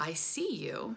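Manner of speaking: soft, half-whispered words. Retelling speaking quietly to a spirit at the back: retelling a half-whisper. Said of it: "I just spoke out in a whisper".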